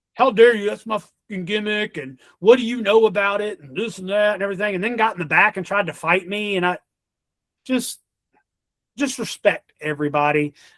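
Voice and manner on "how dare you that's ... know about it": put-on angry wrestler-style outburst. Retelling how a wrestler answered the ring announcer: imitating an angry wrestler. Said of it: "And he got mad".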